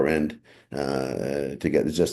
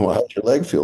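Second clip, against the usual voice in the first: play-acted, jeering, taunting, heckling shout; 7 semitones higher, 5 dB louder than usual. Retelling taunts shouted from the opposing bench: imitating bench players yelling. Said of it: "They're yelling at Brown".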